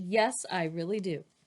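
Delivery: ordinary delivery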